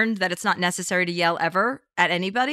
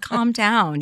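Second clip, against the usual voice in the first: plain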